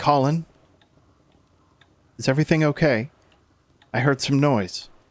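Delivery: put-on soft older woman's voice. Game narrator voicing someone knocking at Colin's door, soft older woman's voice. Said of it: "a soft voice".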